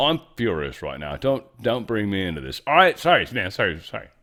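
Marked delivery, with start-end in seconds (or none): 0.0-1.2 bad, fake, put-on British accent, very deep. Joking that they might go British on someone: bad British accent. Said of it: "We might go British on you".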